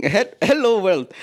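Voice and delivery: trying an Indian accent. Asked for a sentence, trying out the accent in front of the mirror: Indian accent. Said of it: "it's like an Indian accent".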